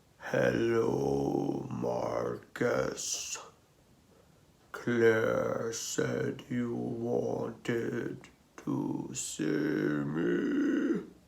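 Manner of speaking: rough, gravelly voice, deep as a bassoon. Narrator reads a huge gray wolf greeting Marcus: deep gravelly wolf voice. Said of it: "gravelly voice was as deep as a bassoon".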